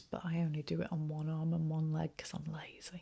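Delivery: soft, fast whisper.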